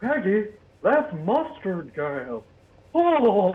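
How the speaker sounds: very slow, dragged-out drawl with swooping, wandering pitch. Retelling a cartoon scene, doing a Hank Hill impression. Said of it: "let me do my Hank Hill impression".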